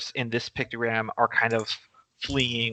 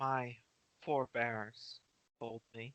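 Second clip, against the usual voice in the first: slow, unhurried half-whisper, barely audible; 14 dB quieter than usual. Speaking in character about the forebears: half-whispering. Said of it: "I whispered that".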